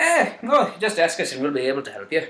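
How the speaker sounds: slipping into a slight Irish lilt. Offering to help with a trade, slipping into an irish accent. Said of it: "Why am I talking like this?".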